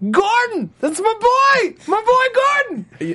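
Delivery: ecstatic, very high, swooping excited shout. Retelling watching a show and cheering on a character, retelling excited shouting at the TV. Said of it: "I'm just shouting at the TV".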